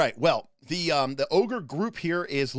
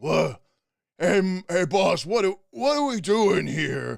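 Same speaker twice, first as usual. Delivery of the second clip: puzzled, confused, stumbling ogre voice; 3 semitones higher, 4 dB louder than usual. Voicing confused ogres asking their boss what to do: confused ogre voice. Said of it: "look back and forth, like".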